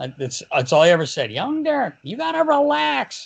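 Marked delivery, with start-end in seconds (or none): 1.3-3.3 very high, swooping, slow, creaky drawl. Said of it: "he's got the high-pitched voice too".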